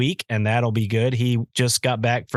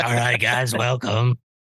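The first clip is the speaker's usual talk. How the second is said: put-on voice of an eighty-year-old smoking lady. Retelling how they sounded opening a show while sick: imitating an eighty-year-old smoking lady voice. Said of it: "I sounded like an eighty-year-old smoking lady".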